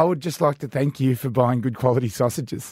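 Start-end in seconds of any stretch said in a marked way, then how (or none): none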